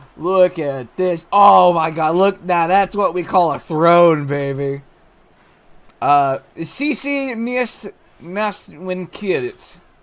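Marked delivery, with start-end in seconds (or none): 6.0-9.8 put-on Russian accent. The speaker says a french phrase, giving it a put-on russian accent. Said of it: "I gave it a Russian accent".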